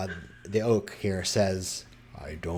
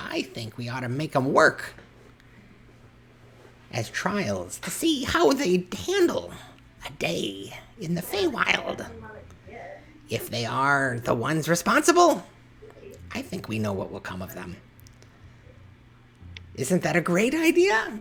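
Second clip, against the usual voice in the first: tiny, high, sing-song pixie voice with swooping tune; 9 semitones higher than usual. Storyteller voicing a pixie among the Fae: tiny pixie voice. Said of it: "in this tiny voice".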